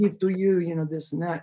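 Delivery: put-on speaking with Israeli accent. Retelling what a man from Israel said to him: Israeli accent. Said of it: "He had like that Israeli".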